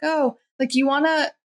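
high, offhand, casual nonchalant tone. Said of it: "that sort of nonchalant".

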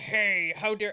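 put-on growling, slow. Retelling a cartoon scene, imitating Blade: slow growl imitating Blade. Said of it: "it's like a slow".

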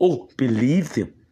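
put-on deep, wise old elder voice. A speaker switches into a film voice mid-story; Lion King voice. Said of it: "I have to go into my Lion King voice".

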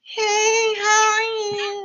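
very high squeaky little voice, drawn-out "you". Speaker imitates a lady from his childhood greeting someone, squeakiest little voice. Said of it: "she had the little squeakiest voice".

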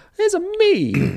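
very high, squeaky cartoon voice. Describing how Mario talks in the newer games, doing a Mario impression. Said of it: "he'd be like".

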